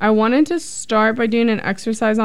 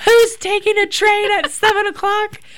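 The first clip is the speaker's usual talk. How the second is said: very high, shrill, hysterical yelling scream; 11 semitones higher than usual. Recalling being stuck by a train while driving, retelling screaming in the car. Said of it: "I'm like screaming in my car".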